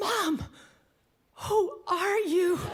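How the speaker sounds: stunned tone, high-pitched and slow.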